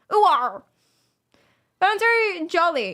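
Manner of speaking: slow, jolly cartoon-pirate drawl. Showing a jovial caricature linked to the accent: jovial pirate voice. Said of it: "jovial caricatures, like the pi-, pirates".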